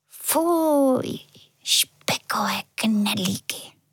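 repulsed, disgusted whisper muttered under the breath. The little angel reacts to the dinner announcement: whispered to herself. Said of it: "Zašeptala si andělka pro sebe".

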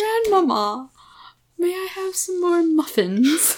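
put-on posh British child accent. Mocking how something sounds British, as Little Lord Fauntleroy. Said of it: "Our accents were probably really offensive".

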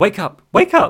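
put-on desperate pleading, very high and very slow. Describing a TV scene where a character begs: imitating Susan pleading. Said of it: "she starts pleading with him".

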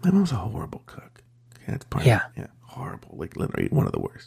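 hushed whisper under the breath. On a recorded show, not wanting to say it too loud, whispering. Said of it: "While you're whispering".

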